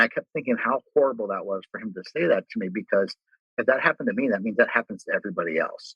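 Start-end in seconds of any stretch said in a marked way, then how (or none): none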